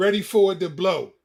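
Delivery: ordinary talk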